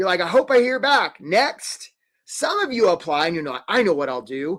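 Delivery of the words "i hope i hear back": weird, pitched-up cartoon crab accent. Speaker mimics a job applicant hoping to hear back, in a weird Charlie the Crab accent. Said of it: "sort of like Charlie the Crab".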